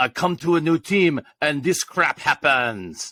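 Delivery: put-on English spoken with a French accent. Retelling what a French player said after hurting his arm: Cormier's French accent. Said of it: "in his French accent".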